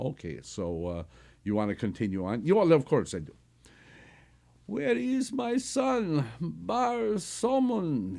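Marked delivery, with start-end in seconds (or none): 4.7-8.2 very high, weak, frail voice, slow. Reading a story aloud, voicing a character's question in a feeble voice. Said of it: "he asked in a feeble voice".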